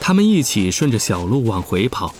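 ordinary talk

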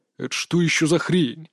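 growled words. A beast reacts to the other team walking onto the field, growling. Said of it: "прорычал зверь".

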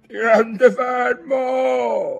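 very high shouting. In a rowing boat in the wind, the grandfather shouts to the boy over the wind. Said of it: "gli gridò il nonno".

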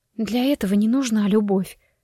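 hushed, bitter whisper. Narrator reads a woman shaking her head at her friend, bitter whisper. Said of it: "с горечью прошептала Астра".

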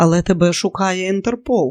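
ordinary talk

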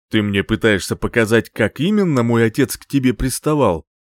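ordinary talk

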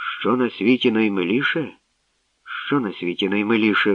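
usual speaking voice

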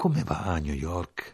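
almost tender. Narrator reads a man's question to the storyteller, asked almost tenderly. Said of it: "quasi teneramente".

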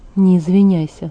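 plain reading voice

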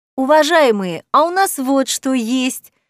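slow, glad, joyful exclaiming. A woman presents a certificate to a group, exclaiming joyfully. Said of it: "Радостно восклицая".

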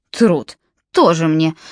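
low, scornful, dismissive, contemptuous snort. Jalabin answers Nimrod while setting the cake on the table, with a contemptuous snort. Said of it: "презрительно фыркнул Джалабин".

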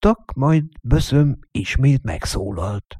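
ordinary delivery

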